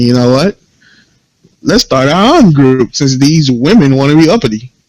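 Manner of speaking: usual speaking voice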